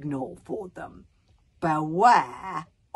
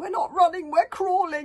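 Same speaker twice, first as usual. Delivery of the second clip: frantic, hysterical panted words, very high-pitched; 12 semitones higher than usual. Narrator reads Bodkin crawling down the tunnel after Wish, to himself, panting hysterically. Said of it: "panted Bodkin, rather hysterically to himself".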